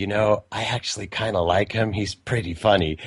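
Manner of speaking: mimicked whisper. Retelling what an old lady at an event said: imitating someone whispering. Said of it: "and she started whispering".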